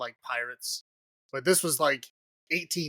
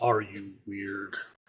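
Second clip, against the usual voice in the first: put-on creepy delivery, lower pitched; 7 semitones lower, 3 dB quieter than usual. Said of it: "you say it like a creep".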